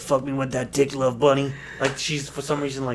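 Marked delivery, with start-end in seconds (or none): 0.0-1.5 exaggerated, way too deep, low voice. Retelling how she says the pet name: imitating someone's way too deep voice. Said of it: "Way deeper with the voice".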